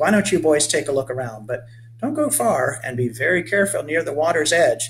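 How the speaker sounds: ordinary delivery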